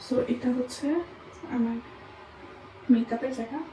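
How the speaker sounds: soft, quiet, hushed speech. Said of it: "আমি অনেক আস্তে আস্তে কথা বলতেছি".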